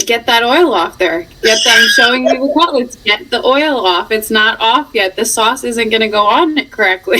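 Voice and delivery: ordinary talk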